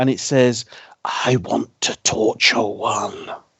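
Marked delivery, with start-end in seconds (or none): 1.0-3.3 put-on very slow, creepy, whispery old-man voice. Retelling what a creepy voice said at the end, whispery dirty old man voice. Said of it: "in a whispery, dirty old man voice".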